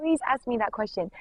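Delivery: acted-out, earnest, imploring begging tone. Retelling a voice that asks again and again: imitating someone begging. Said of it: "begging me".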